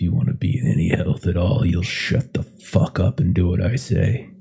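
muttering under breath. Retelling what a man said back to him, muttering under his breath. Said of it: "you hear like under his breath".

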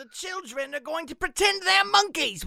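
very high, loud, fake English accent. Joking about a banned film: put-on English accent. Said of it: "Why is that my English accent?".

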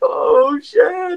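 high, frightened yelp.

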